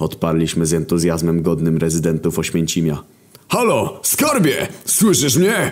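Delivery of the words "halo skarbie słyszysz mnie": very high, swooping, thrilled, excited yell. Reading a story, a companion gets phone signal and yells into the phone, excited. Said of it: "Wydarł się do słuchawki i z podnieceniem".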